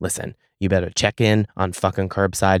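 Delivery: mock-calm delivery. Retelling a phone call to a customer service worker, retelling speaking very calmly. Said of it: "very calmly".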